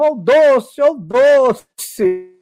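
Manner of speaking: very slow, drawn-out street-vendor yell. Telling a joke about a vendor answering a customer, imitating a vendor yelling. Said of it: "eu gritava".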